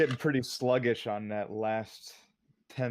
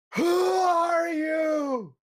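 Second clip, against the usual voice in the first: very high, full-throated, top-of-the-lungs shout, you stretched; 8 dB louder than usual. Norik, seeing torchlight and four figures in the distance, shouting at the top of lungs. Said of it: "he's gonna shout just at the top of his lungs".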